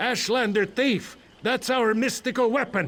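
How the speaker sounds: mock yell, high.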